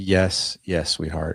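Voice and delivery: mock-gentle, put-on kind tone. Retelling meeting his father's wife, imitating a kind voice. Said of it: "She was so kind".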